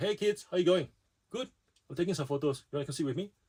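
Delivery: put-on Malaysian-accented speech. A father acts out greeting his kids while he takes photos, Malaysian accent. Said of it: "Malaysian accents coming out?".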